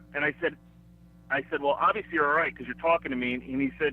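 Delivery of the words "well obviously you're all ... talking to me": ordinary delivery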